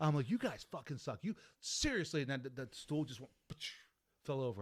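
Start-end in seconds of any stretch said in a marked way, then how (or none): 0.3-2.2 put-on angry, fed-up, pissed-off outburst. Retelling shouting at the spirits after pillows flew: retelling own angry outburst. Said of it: "I was angry".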